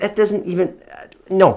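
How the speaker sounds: stumbling over words. Arguing with Layla about blankets and getting her PJs, stammering.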